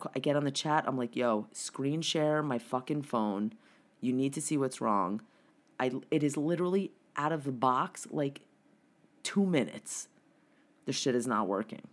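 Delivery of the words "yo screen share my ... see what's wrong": ordinary talk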